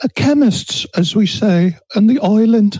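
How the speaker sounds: fake British accent, high and slow. Explaining a point with an everyday example, in a Harry Potter voice. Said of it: "What bloody voice was that?".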